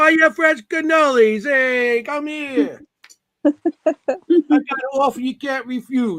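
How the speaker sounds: street vendor hawking call. Joking about selling cannoli outside the Shanley, hot dog vendor hawking voice. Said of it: "I sound like hot dogs".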